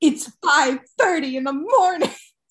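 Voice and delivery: sudden abrupt switch to annoyed, pissed-off voice. Retelling a yoga teacher snapping at a boy: imitating Miss Patty's abruptly angry voice. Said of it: "her voice changes abruptly and she goes".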